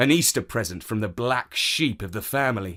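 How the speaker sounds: plain reading voice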